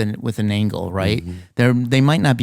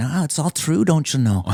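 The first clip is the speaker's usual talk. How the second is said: put-on higher-pitched Scottish accent; 5 semitones higher than usual. Retelling a movie scene, the mom answers her son in a scottish accent. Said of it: "Scottish accent or something".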